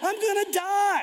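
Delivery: mock shout, blurted out.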